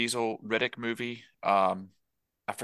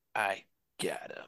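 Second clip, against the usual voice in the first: mock-deadpan, quieter and much slower, flat and hushed; 6 dB quieter than usual. Describing a man's delivery to listeners, retelling his deadpan quiet line. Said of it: "he's got several deadpan, quiet, like lines".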